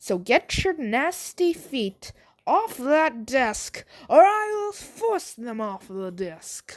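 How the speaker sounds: put-on Irish accent. Voicing a blue-haired boy telling someone to remove their feet from a desk: angry irish accent. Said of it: "I start to speak like an Irishman".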